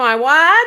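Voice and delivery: put-on very loud, broad Australian accent. Saying Taiwan the way Bo would, Bo's Aussie accent. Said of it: "as uh Bo would say, ... He puts a real Aussie Taiwan".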